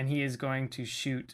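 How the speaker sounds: ordinary delivery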